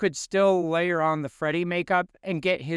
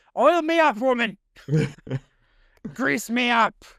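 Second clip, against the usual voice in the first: high-pitched, swooping, laid-on exaggerated Scottish accent; 6 semitones higher, 4 dB louder than usual. While dreamcasting David Tennant as Willie, speaker does a Groundskeeper Willie voice. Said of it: "groundskeeper Willie".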